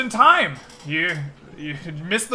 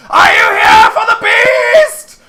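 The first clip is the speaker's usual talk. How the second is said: shrill, very high, very loud madman shrieking; 12 dB louder than usual. A crazy man on the corner sees you coming back, screaming madman. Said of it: "begins screaming".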